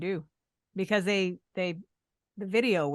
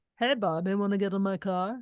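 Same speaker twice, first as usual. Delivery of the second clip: put-on accent that sounds English; 2 semitones higher than usual. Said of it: "interesting Eng- English accent he had going on".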